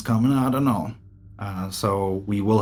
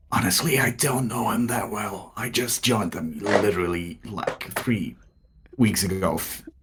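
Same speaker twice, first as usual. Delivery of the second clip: loud stage whisper. Whispering to her in character about him: loud whisper. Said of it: "I loudly whispered to her".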